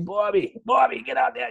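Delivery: put-on barking loud yell in Boston accent. Retelling how your coach called you to go out there, imitating coach's Boston-accent yell. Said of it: "the officer coach had the Boston accent".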